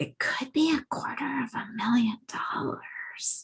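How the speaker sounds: soft, high, half-whispered aside. Retelling what she said to her husband in the kitchen: imitating her own whisper. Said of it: "I kind of whispered to him".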